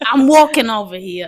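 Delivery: very loud, slow put-on New York wise guy voice. Trying out a New York accent after being asked to do one: New York accent. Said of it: "Do a New York accent".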